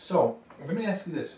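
talking around a mouthful. Mid-discussion, talking with Skittles in your mouth. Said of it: "the freaking Skittles in my mouth".

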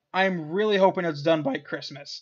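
cracking, breaking voice. Giving an update on an NCAA Football 14 series, voice cracking. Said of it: "my voice cracked there".

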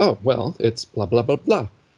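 ordinary talk

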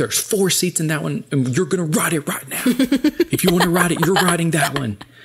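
high, loud yelling. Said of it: "yelling at us".

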